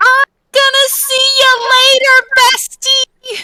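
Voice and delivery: very loud, high, all-out yell. In a role-play, calling goodbye to a bestie before switching back, uber-loud shout. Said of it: "I'm gonna shout again with the uber loud voice".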